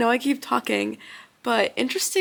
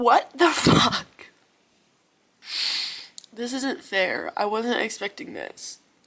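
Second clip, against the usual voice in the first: tearful, crying voice. Speaker caught off guard by something, speaking while crying. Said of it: "I don't know why I'm crying".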